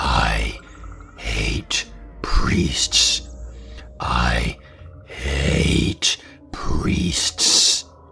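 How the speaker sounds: very slow, low, rasping guttural growl. Narrator retells what Mary Lou said as dad dialed the phone, in a low guttural growl. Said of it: "in a low, guttural growl".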